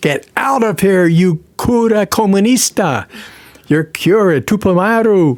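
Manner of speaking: put-on shrill, high, drawn-out furious top-of-the-lungs shout. Retelling how a son-in-law threw the speaker out: imitating a man shouting at top of voice. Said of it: "shouting at the top of his voice".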